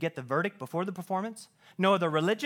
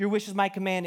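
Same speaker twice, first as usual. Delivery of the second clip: normal talking voice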